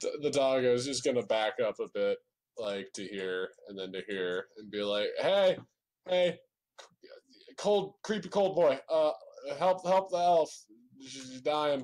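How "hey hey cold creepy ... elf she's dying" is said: frantic, stumbling, panicked begging voice, pitched higher. In a role-play scene, a dog character speaks up in an emergency, panicked pleading. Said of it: "I get really bad at words when I'm panicking".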